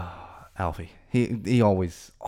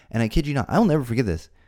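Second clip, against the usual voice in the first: ordinary talk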